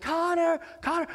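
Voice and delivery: very high, acted-out searching scream. Recounting strangers helping search for a lost kid, imitating them screaming his name. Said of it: "They're screaming for Connor".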